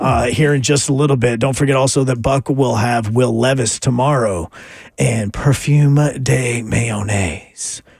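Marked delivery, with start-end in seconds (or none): 5.0-7.8 low, very slow sexy voice. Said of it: "That, that's your sexy voice?".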